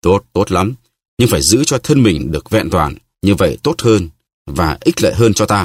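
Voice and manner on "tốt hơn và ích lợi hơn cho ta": plain reading voice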